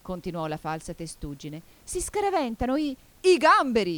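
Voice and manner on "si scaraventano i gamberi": high, wild, madcap shout. Reading the gryphon's line as it jumps around like a madman, shouting. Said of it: "urlò il grifone saltando come un matto".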